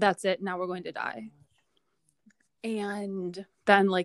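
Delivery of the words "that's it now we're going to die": utterly composed, unbothered, calm, soft and quick. Retelling what a girl's mother said after the bump: imitating a completely calm voice. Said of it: "in a completely, completely calm voice".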